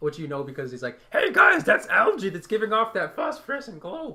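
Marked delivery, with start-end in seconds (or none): 1.1-4.1 throat-straining, very high, loud shout in strained voice. Voicing a character for the group, strained character voice. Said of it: "I'm so glad we gave him that voice".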